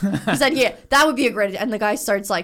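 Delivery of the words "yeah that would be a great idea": play-acted, quick, tossed-off sarcastic tone. Retelling what a companion sarcastically said to a man at the airport, retelling a sarcastic reply. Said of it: "you said something sarcastic to him".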